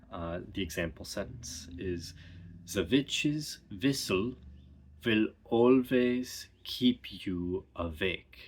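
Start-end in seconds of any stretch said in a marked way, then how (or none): 2.7-8.5 German accent, w as v. Demonstrating an example sentence in an accent lesson, in a stereotypical German accent. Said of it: "stereotypical German uh, sound substitutions, and that is changing W sounds um, to V sounds".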